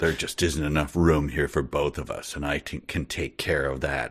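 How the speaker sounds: low, quiet angry mumble. Reading a story aloud, the narrator voices Zinn mumbling angrily to himself. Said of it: "Zinn mumbled angrily to himself".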